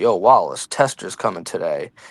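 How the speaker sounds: loose, casual, slangy, tossed-off street-talk delivery. Retelling a TV scene, impersonating Poot talking to Wallace. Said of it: "I'll stop impersonating them".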